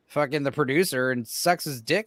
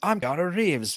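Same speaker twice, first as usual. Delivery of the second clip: higher-pitched, poorly done put-on English accent; 3 semitones higher than usual. Imitating an actor's bad English accent from Bram Stoker's Dracula: Keanu Reeves impression. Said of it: "his bad, like, Carfax Abbey English accent".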